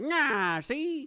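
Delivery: vintage fifties movie-style voice. Showing how a sassy ninja character sounds: 1950s voice. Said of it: "imagine a more, like, nineteen fifties voice".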